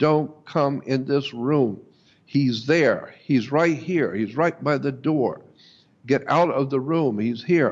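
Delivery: plain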